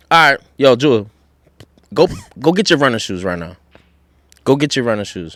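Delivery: strict voice. Recreating an order to a daughter on request: imitating own stern tone. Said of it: "So I'm very curious if you can".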